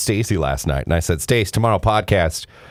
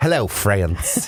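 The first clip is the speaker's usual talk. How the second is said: exaggerated, over-the-top TV preacher voice. Podcast hosts greeting listeners as the show starts, exaggerated televangelist voice. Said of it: "He sounds like a televangelist".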